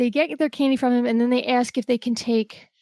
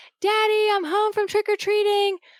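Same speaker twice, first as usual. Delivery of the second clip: put-on very high, shouted child's voice; 10 semitones higher than usual. Retelling a scene where a son comes home and shouts at his father, imitating a kid shouting. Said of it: "starts shouting at him like".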